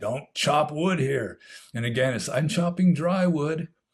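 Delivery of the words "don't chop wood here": play-acted angry, fed-up yell. Retelling telling a man chopping wood to stop, again, retelling a yell. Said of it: "So I yelled at him again".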